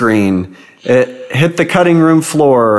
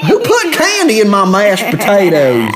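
very high, swooping put-on sitcom-style country accent; 9 semitones higher than usual. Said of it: "Give me a better country accent though".

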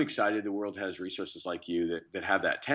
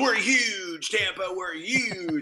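put-on high, screaming TV car salesman voice; 12 semitones higher than usual. Speaker imitates a local car dealer's TV ad; imitating a screaming car dealer. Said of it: "he's just screaming at the audience".

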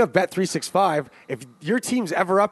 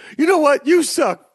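loud, very high, shrill screaming; 9 semitones higher, 6 dB louder than usual. Acting out a football head coach yelling back at a fan: mock screaming. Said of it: "you're screaming back at a fan".

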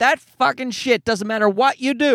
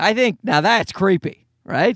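ordinary talk

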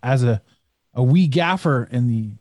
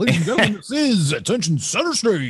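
pitched-up strip club announcer voice; 5 semitones higher than usual. Recalling giving a strip club a shot, the speaker does a strip club announcer voice. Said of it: "they don't want to hear this voice".

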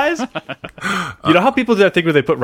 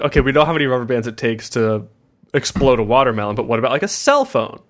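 ordinary talk, nothing marked

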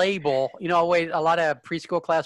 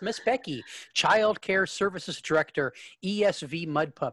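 normal talking voice

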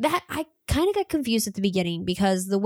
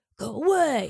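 higher-pitched little dragon character voice. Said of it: "like, dragon voice".

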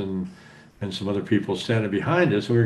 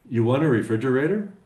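usual speaking voice

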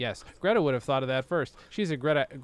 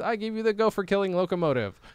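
normal talking voice

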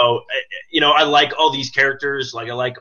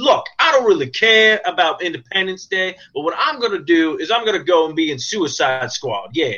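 streetwise street talk, a touch higher; 5 semitones higher than usual. Guessing what an actor told the studio: Will Smith impersonation. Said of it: "my Will Smith impersonation".

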